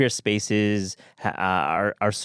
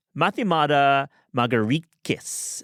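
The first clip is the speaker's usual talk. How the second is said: slow, higher-pitched, careful delivery. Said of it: "I'm gonna say this name slowly".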